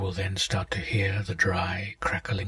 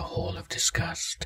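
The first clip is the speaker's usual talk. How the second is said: ordinary delivery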